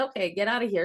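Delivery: ordinary delivery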